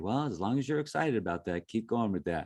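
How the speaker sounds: dry, faintly sarcastic, acted-out tone. Retelling what a teacher would say: imitating a teacher's sarcasm. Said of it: "sarcasm in there a little bit".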